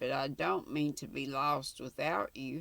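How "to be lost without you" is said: plain reading voice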